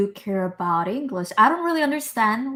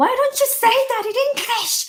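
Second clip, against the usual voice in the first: very high, shrill mock fighting yell; 4 dB louder than usual. Retelling a fight with her sister at a mall: imitating yelling at her sister. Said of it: "I yelled at her".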